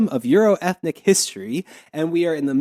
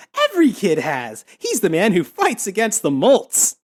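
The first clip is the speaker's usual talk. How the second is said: put-on bright, perky, cheerful childlike sing-song; 4 semitones higher than usual. Retelling how a woman in a story suddenly perks up, in a put-on cheerful, childish voice. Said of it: "In this like cheerful, childish voice".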